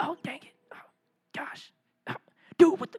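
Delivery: whispered, under-the-breath frustrated groans. Retelling gaming late at night with the volume down: imitating someone whispering. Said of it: "We're whispering".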